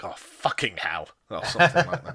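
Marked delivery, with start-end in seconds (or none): 0.0-1.1 low muttering to oneself under the breath. Showing how they talk to themselves: imitating own muttering under breath. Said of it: "muttering under my breath".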